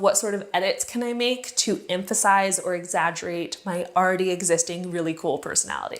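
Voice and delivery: ordinary talk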